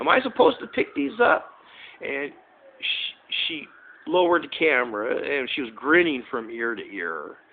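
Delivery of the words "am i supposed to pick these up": mock shrill yell, pitched way up. Retelling calling across the street about candy bars: imitating own yell. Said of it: "I yelled at her saying".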